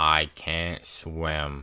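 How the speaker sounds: utterly deadpan, low, flat monotone. Retelling fighting for his life, the speaker quotes Ben: imitating Ben's flat monotone. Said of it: "he says in the most monotone voice".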